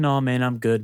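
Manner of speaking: soft, soft-spoken voice. Retelling a customer's reply when offered a cart: imitating a soft voice. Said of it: "he's very soft".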